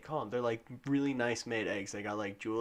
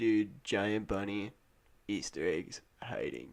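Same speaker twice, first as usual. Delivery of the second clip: put-on stoned, dazed way of talking; 3 semitones lower than usual. Joking about who invented easter, imitating a stoned guy. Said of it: "who's smoking enough weed to where he thinks of".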